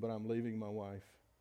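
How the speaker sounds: put-on quivering, tearful voice, choking back tears. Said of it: "choking back tears, voice quivering, he said".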